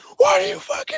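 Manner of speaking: furious, incensed, very high-pitched ranting outburst. Describing a coach's sideline reaction to a player's mistake, imitating a screaming coach. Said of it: "he was screaming at him on the sidelines".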